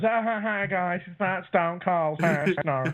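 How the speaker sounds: drawn-out chuckling, laughing, high and very slow. Showing the thing Jeff does when denying he is Stone Cold: imitating Jeff. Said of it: "do the thing where he goes".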